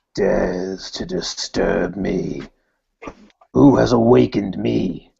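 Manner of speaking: very slow, rough growling voice. A player recounts how he spoke to the others from the darkness: growling voice. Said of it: "I just start sort of like growling like that".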